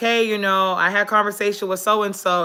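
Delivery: normal talking voice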